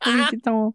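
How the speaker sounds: dumb, put-on fake French accent. Saying the name for Wee Kitten in a dumb French accent. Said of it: "my dumb French accent for Wee Kitten".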